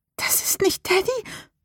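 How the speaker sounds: desperate, breathy whisper. In a story, a character hears a voice calling through the wall, desperate whisper. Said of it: "flüsterte Rebecca verzweifelt".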